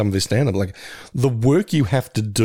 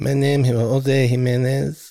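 put-on Latin American Spanish accent; 4 semitones higher than usual. Describing an astronaut in The Right Stuff, doing a Jose Jimenez impression. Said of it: "constantly doing a Jose Jimenez impression".

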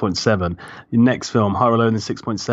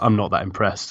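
plain

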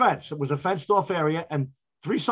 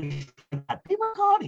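put-on voice, much higher pitch; 9 semitones higher than usual. Describing a former union delegate, imitating Pete Riccardi's high voice. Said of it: "He was very high voice".

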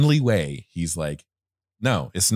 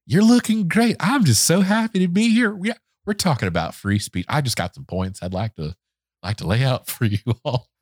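eager, friendly put-on voice, higher pitched; 8 semitones higher than usual. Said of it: "like if a golden retriever were a person".

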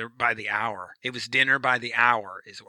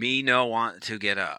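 ordinary delivery

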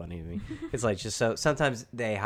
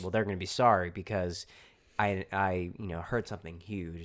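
plain

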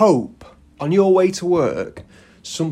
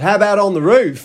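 high, loud, put-on Australian accent; 5 semitones higher, 6 dB louder than usual. Retelling how a character delivers a line in a film, in an Australian accent. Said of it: "In an Australian accent for some reason".

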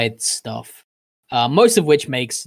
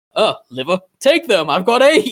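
high, swooping, sing-song cartoon-creature voice; 7 semitones higher, 3 dB louder than usual. Comparing a manga scene to a Futurama episode: Zoidberg voice. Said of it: "feel like Zoidberg on the autopsy table".

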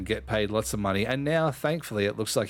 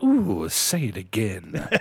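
very slow, drawn-out, swooping up and down, animated goading; 4 dB louder than usual. Asking another speaker to say a name again: Shenzi from The Lion King voice. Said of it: "got me acting like fucking Shenzi from The Lion King".

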